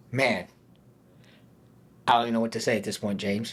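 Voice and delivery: fighting tears, tearful, words held in. Reacting to another speaker's story, holding back tears. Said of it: "I'm trying to hold back tears right now".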